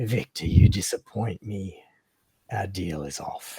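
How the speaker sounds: low, deep monster voice. Narrating a game, voicing a being heard in everyone's head: telepathic creature voice. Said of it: "you hear this voice".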